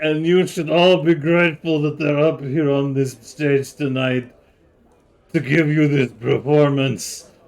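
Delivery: crying while speaking. Voice a man presenting the little green people on stage, crying while speaking. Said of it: "And he's like crying now".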